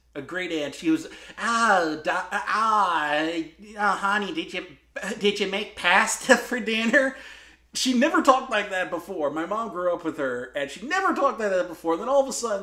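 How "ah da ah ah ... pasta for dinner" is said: put-on high Midwestern accent with stretched "ah". Imitating a great aunt who talked like the film's Midwestern characters: imitating great aunt's Midwestern accent. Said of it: "I had an aunt who talked exactly like that".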